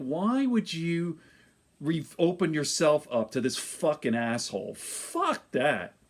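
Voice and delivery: hostile, aggressive, profane cursing voice. Retelling own reply to the wife about going to confession: retelling own aggressive retort. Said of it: "Sorry for being so aggressive here".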